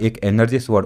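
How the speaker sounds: plain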